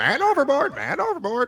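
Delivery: very high, swooping pirate's parrot voice. Imagining aloud how it would sound: pirate's parrot voice. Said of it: "it sound like a pirate's parrot".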